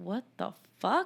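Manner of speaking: put-on indignant, annoyed, pissed-off, angry disbelief. Retelling a movie scene where she overhears him: imitating her angry reaction. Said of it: "you could tell she's pissed".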